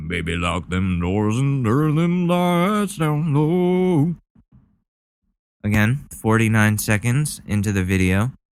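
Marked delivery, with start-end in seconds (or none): 0.1-4.1 put-on manly voice, low and drawn-out. Joking about getting testicle implants, showing how he would sound: pretend voice after testicle implants. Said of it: "I will sound like this".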